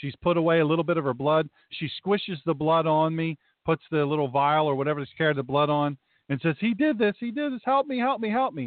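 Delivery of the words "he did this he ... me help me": mock, high, pitched-up, frantic-sounding screaming cries. Speaker retells a woman smearing her blood on the speaker and crying for help, imitating a woman screaming. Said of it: "then she starts screaming".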